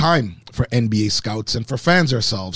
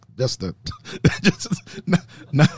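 talking through laughter, higher pitch; 5 semitones higher than usual. Backing off a joke about boys turning to men, laughing while talking. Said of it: "I'm laughing at my own joke".

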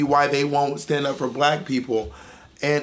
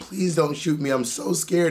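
mock tearful, crying, begging voice. Retelling how a grown man pleaded for his life, imitating a man begging, crying. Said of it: "He's just begging".

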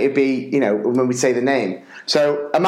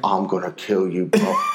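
muttered under breath, much lower pitch; 6 semitones lower than usual. Retelling what a mate said while being ushered up to do the prayer, under breath. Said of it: "under his breath".

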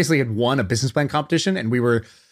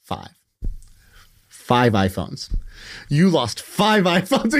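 mock self-scolding, slow, word by word; 4 semitones higher than usual. Retelling a friend at the mirror holding up his hand: imitating a friend scolding himself. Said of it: "He's telling himself this".

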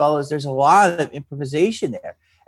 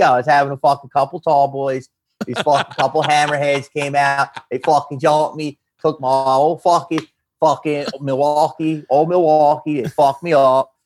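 put-on thick Philadelphia accent. Acting out a guy telling how he got jumped, thick philly accent. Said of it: "your Philly accent just came out".

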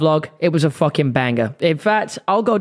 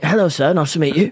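full put-on English accent throughout. Speaker shows how he'll greet a Mexican bloke: full English accent. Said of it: "Full English, man".

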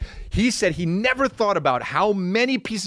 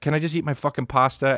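slightly giggling, half-laughed delivery; 2 semitones lower than usual. Retelling Dad's answer while eating pasta, imitating a slightly giggling reply. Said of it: "giggles a little bit, but he's like".

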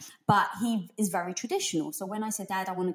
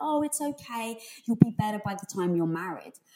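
put-on heavy Greek old woman accent, laid on thick. Speaker imitates their grandmother comforting them after a scraped knee, thick Greek accent. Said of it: "thick Greek accent".

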